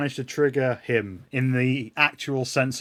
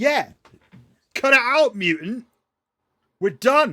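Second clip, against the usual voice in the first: very high, loud, in-character yell; 10 semitones higher, 5 dB louder than usual. Voicing the welder who steps forward at the mutant: yelling as the welder. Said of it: "welder step forward and yell".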